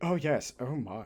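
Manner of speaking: hushed, low, put-on posh Victorian English accent. Describing how everyone in the Victorian era talked, in a mock posh Victorian voice. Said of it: "so everyone going".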